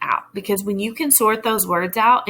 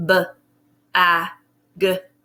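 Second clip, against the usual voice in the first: robotic voice, each sound split apart. Showing a learner how to sound out a word, robot voice, sounds split apart. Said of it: "you're going to say it like a robot".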